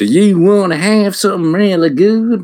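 very high-pitched, loud, folksy put-on southern voice. Describing how southern-food places talk to customers: put-on southern restaurant voice. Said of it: "have like the put on voice being like".

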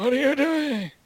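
put-on very high old man voice. Trying out an impression while others listen; it comes out as an old man voice. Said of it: "Sounded like an old guy".

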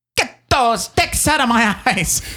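put-on old-timey 1920s-style accent. Getting into character quickly for a comedy bit, speak in a 1920s-style accent. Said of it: "Very, very 1920s".

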